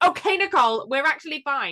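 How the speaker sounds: play-acted, high, angry-sounding tone. Retelling a cast member's apology that doesn't match her tone: imitating Alexia's angry tone. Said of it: "she's still saying it like".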